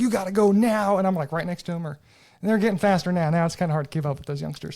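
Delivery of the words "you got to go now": play-acted, loud, hollering coach's yell. Retelling running track alongside the kids: retelling own yell.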